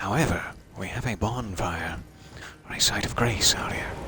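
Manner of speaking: hushed, whispered speech. Speaker narrating a video game playthrough, whispering. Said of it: "I don't know why I'm whispering".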